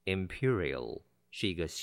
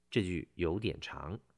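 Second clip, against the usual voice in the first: normal talking voice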